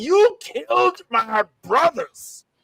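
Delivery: mock very slow, seething, angry delivery. Acting out the dark, rated-R Michelangelo: angry Michelangelo voice. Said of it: "He's like".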